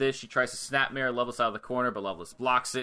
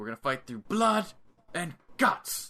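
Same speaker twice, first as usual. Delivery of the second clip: put-on British accent with pitch nudged higher; 5 semitones higher than usual. Imagining what a wrestler might say: William Regal impression. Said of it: "That was a good impression".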